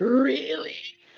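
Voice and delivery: odd, weird, threatening, sinister put-on voice. Describing a character's reaction, acting out the reply in a put-on weird menacing voice. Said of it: "a weird, menacing looking or menacing sounding voice is gonna go".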